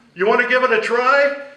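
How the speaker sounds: high, loud, inviting rallying shout.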